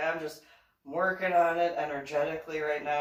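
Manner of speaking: ordinary talk, nothing marked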